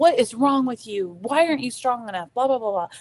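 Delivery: put-on angry, berating, yelling rant. Retelling an ex-husband scolding a son: imitating someone yelling and berating. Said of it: "just yelling and berating at him".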